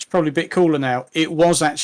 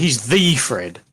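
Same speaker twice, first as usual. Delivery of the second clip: THE stressed hard, slow and drawn out. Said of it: "he deserves the definite article".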